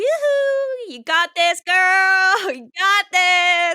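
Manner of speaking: put-on sarcastic high cheer with girl stretched out. Voicing a character waving a flag at a teammate: sarcastic cheering. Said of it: "sarcastically going".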